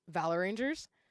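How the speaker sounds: ordinary talk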